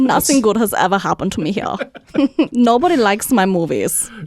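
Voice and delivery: faked, put-on German accent. Imitating the director under discussion, complaining about Earth: imitating a German accent. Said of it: "now I feel bad that we mocked his accent".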